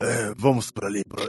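acted weary, raspy elderly voice. Imitating Trevor in the English dub: tired, hoarse voice. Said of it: "ele fala rouco, puxando morto".

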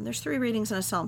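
normal talking voice

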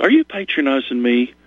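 sarcastic, mocking tone. Retelling a bathtub scene from a movie: imitating Julia Roberts being sarcastic. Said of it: "she just sarcastically says".

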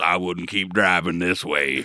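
put-on spooky stranger voice. Imagining a spooky stranger warning drivers from the roadside: imitating Frank Miller as a spooky roadside stranger. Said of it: "he goes".

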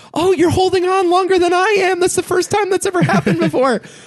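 thrilled, excited outburst, very high pitch. Retelling a movie scene, the speaker imitates Shirley MacLaine getting all excited. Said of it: "and Shirley MacLaine gets all excited".

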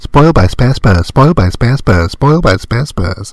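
rattled off very fast.

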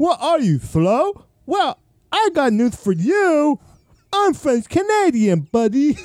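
speech like deaf person. A French Canadian character answers someone who mocks her, sounding deaf. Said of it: "Why do you sound deaf then?".

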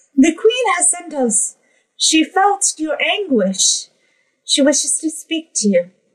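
very high, tiny little fairy voice. A tiny pixie floats right in front of the listener; tiny pixie voice. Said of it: "you would recognize that they are pixies. / It's just a little diminutive thing with buzzing wings and sort of like a dark brown coloring to all of their little fairy outfit and wings. / you will hear".

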